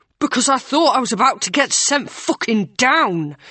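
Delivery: through clenched teeth. Narrator reads Ryan's reply to April, said through gritted teeth. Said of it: "Ryan said through gritted teeth".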